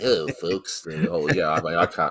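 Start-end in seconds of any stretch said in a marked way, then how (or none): 0.0-0.8 put-on cartoon dog voice. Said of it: "you're definitely way better, better than me".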